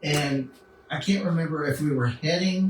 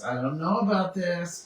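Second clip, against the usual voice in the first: usual speaking voice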